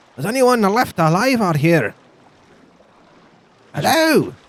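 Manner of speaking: put-on Scottish accent, very high, calling out. A player's character on the shore calls out for survivors from the boat: Scottish accent. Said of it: "I'm going to do a Scottish accent this s- campaign".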